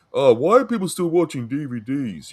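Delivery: high, snooty, condescending, stuck-up disdainful voice. Mocking people who look down on others: imitating a snob. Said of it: "snobs that are like".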